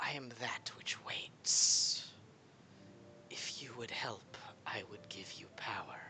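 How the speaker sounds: hissing, breathy whisper. Voicing the hissing voice answering the question 'who are you?', in a hissing voice. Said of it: "the hissing voice says".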